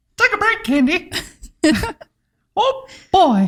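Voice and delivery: squeaky voice with swinging pitch. Asked by a co-host to show a Mickey Mouse voice, doing it. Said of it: "let's hear Mickey".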